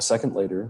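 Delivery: plain reading voice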